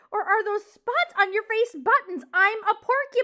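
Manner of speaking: shrill, very loud screech at full volume. Aerith, a porcupine, screeches at Poppy, screeching. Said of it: "Aerith screeched".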